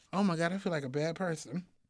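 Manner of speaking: ordinary talk, nothing marked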